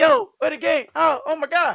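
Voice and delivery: acted shrill, frantic, high, loud panicked outburst. Retelling finding a rented game gone from the store: retelling own panic. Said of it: "I'm panicking".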